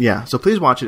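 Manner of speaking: plain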